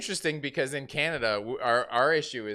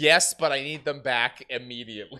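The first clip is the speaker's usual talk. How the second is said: ordinary talk, nothing marked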